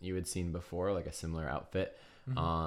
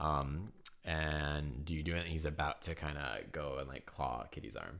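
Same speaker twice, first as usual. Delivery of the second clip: ordinary talk, nothing marked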